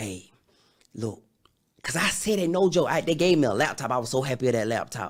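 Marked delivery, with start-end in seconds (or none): 0.0-1.2 very soft, very quiet hushed whisper. Telling how he pulled up on a secretary lady, retelling a whisper. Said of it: "like whispered to her".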